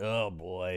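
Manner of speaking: soft, fed-up, put-upon exasperated sigh. Retelling a movie scene where a hooded alien rolls his eyes: imitating an exasperated eye-roll.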